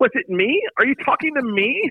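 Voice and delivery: very high, squeaky, high-pitched put-on voice. Retelling a story, quoting Franny in a high-pitched voice. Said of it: "in a high-pitched voice".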